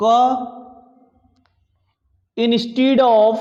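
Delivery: dictating delivery. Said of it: "नोट करके लिखिएगा".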